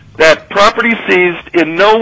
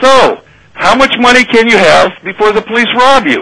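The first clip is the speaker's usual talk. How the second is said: shouted out with raised pitch; 5 semitones higher than usual. Speaker retells shouting a question at troopers searching his property; retelling a shout. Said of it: "So I shouted as loud as I could".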